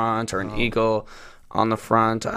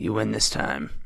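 grand, theatrical, very dramatic delivery; 2 semitones lower, 5 dB quieter than usual. Retelling a truck commercial where he faces a Longhorn: dramatic Matthew McConaughey impression. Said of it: "he just very dramatically goes".

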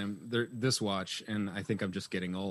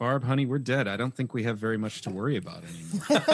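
ordinary talk, nothing marked

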